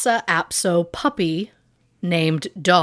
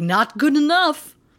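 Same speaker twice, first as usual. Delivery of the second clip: put-on vaguely vampire-ish voice, pitched up; 9 semitones higher than usual. Retelling a tarot reader's reply: vaguely vampire-like voice. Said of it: "I don't know what voice that was".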